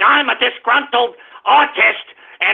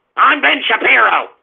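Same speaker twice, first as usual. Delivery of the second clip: smug, self-satisfied, superior delivery. Imitating Ben Shapiro talking into the camera: smug Ben Shapiro impression. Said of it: "like a smug".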